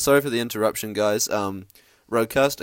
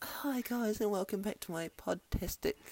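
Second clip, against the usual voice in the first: put-on tiny, very high, very hushed girlish voice; 11 semitones higher, 14 dB quieter than usual. Imitate Lydia welcoming listeners back to her podcast, in a cute little girl Lydia voice. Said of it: "she's a cute little girl voice".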